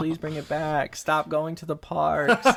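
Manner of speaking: mock, put-on pleading, begging tone. Reading out listeners' emails about the show, mock begging. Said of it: "begging, like".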